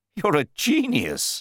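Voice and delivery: high, thrilled, excited burst of a cry. Riding in the car, the narrator cries out excitedly to his companion. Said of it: "I cried".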